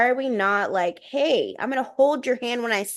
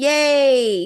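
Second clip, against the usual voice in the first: mock excited girlish cheering, louder; 4 dB louder than usual. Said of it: "girls are still very much like".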